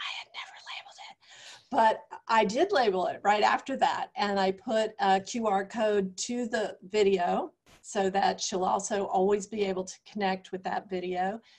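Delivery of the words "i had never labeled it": quick, fast, hushed, barely voiced whisper. A speaker telling a story about a quilt drops into an aside, whispering. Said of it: "I'm just whispering".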